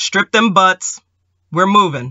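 hoarse, husky voice. Narrator reads a command given to a group of soldiers, hoarse command. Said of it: "came the hoarse command".

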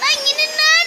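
high-pitched, loud yelling. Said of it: "bağırma, bağırma".

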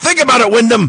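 mock sudden, very high shouted callout. Acting out a wrestling promo where he looks at the camera and shouts, imitating someone shouting. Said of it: "he just shouts".

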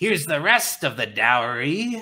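nasty sneering goblin voice, dowry drawn out. A narrator voices one of the goblins passing by: sneering goblin. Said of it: "one of the goblins sneers".

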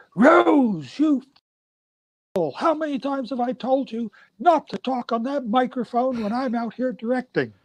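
mock director's scream, very high, drawn out. Retelling how the director yelled at Rose about the microphone, retelling a director's scream. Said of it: "The director screamed out and said".

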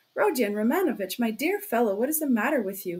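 usual speaking voice

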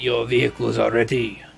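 French-accented speech. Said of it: "Got a French accent now".

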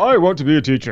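put-on disguised deadly voice. Retelling how they got the job while in disguise: put-on deadly voice. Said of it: "this deadly voice".

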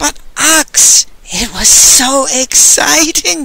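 high, very slow, drawn-out hissed words. The ostler replies to Ox: hissed. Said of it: "the ostler hissed".

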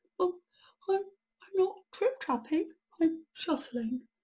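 tiny little voice, very high. A troll pushed onto a plank answers a pirate, in a very small voice. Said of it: "said the troll in a very small voice".

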